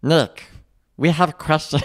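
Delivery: alien cartoon voice. Speaker addressing Nick in the only alien voice they can do, Stitch voice. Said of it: "this is the only alien voice I can do".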